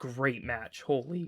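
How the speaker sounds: voice cracking, breaking mid-word. Calling out a wrestling match result, voice cracking. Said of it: "my my voice just cracked".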